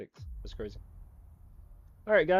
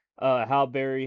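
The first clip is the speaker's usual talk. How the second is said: ordinary talk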